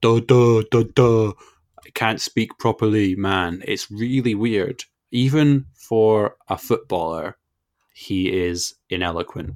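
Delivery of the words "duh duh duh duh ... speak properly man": loud, bellowing, dim-sounding ogre voice. Interrupting Callum, the speaker mocks pundit Danny Mills: Danny Mills as a dim ogre. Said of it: "he's like an ogre".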